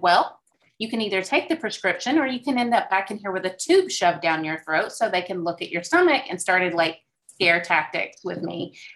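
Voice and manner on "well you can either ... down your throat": ordinary talk, nothing marked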